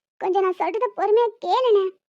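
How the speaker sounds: ordinary delivery, nothing marked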